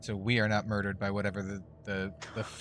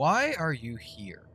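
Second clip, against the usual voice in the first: stern, severe, raised voice; 6 semitones higher, 5 dB louder than usual. Asking another player's character in character, very sternly. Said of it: "very sternly".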